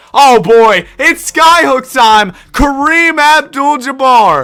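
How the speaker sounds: thrilled, high, loud, drawn-out announcer hype call.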